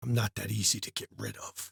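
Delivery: eerie, very hushed whispered spirit voice, close in. Voicing a spirit that whispers close to a player's ear: whispering spirit voice. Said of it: "a voice whisper very close to your ear".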